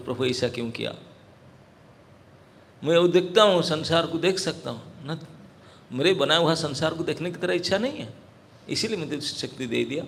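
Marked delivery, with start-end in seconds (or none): none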